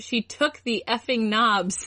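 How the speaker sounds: ordinary delivery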